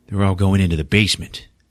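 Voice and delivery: normal talking voice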